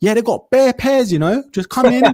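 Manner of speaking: very high, polite, professional phone voice. Retelling a call to a shop, the speaker imitates the assistant's professional phone voice. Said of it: "This is her professional voice".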